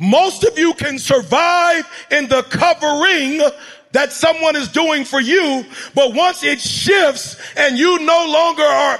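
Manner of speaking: slow, one blow at a time.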